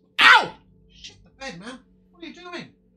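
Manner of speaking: very loud, very high yelling outburst. She slips down off your shoulder and you cry out, yelling. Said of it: "You don't need to yell at me like that".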